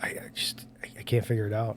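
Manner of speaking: whispering. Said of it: "whenever I'm like".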